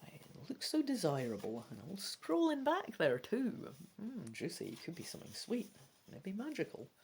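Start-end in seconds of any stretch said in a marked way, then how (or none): 4.0-6.9 soft muttering to oneself. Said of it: "I'm just muttering".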